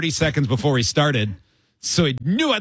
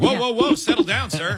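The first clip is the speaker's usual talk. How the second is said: gentle, half-hearted fatherly yell, pitched up; 6 semitones higher than usual. Teasing a player whose answer was not a real yell: imitating a dad's version of yelling. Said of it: "That was like your dad's version of yelling".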